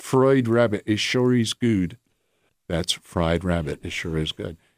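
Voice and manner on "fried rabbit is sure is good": put-on Ocracoke brogue accent. Speaker showing how the Ocracoke old-timers talk: Ocracoke brogue. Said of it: "where they all talk like this".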